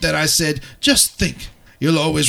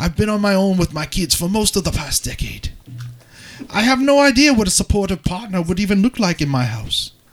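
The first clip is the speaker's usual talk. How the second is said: received pronunciation British accent; 4 semitones higher than usual. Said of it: "And now for the Queen's English".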